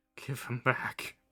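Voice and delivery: pleading from far away with distant echo. Game narrator voicing a distant echo in the knight's voice: pleading knight's voice. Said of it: "it's more pleading than anything".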